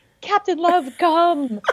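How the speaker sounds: mock very high hollering yell, shouted from far off. Imagining calling a dog at the dog park: imitating a yell.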